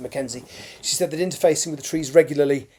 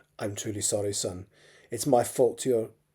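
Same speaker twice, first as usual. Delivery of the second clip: ordinary delivery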